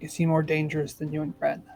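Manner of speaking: very quiet. Game narrator voicing a character who looks at Callum and asks, very quietly. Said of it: "very quietly she's gonna say".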